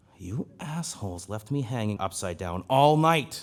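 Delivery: loud, perturbed, angry hiss. Game narrator voicing a human left hanging upside down all night, hissing. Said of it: "he hisses".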